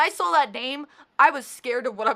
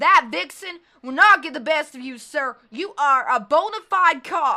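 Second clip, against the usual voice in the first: put-on homespun country-style accent; 2 semitones higher, 4 dB louder than usual. Voicing a character hyping himself up in the mirror: put-on country accent. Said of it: "I guess country accent".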